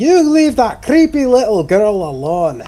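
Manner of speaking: high, loud, in-character battle shout. Playing a character who defends a companion from a barbarian: shouting in character. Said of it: "Belagor is going to shout".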